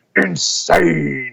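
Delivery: ring-announcer voice pushed deep and rough, gravelly. Showing how the name is called in the ring: deep gravelly announcer voice. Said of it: "dig down and make my voice all gravelly".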